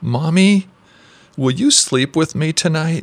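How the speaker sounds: put-on high, trembling, quavering small child's voice, pleading. A small boy asks his mother as she tucks him into bed, trembling voice. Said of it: "asked with a tremor in his voice".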